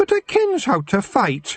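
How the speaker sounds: sulky, very high-pitched. A young girl answers an elder who doubts her; sulky. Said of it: "Maggie said sulkily".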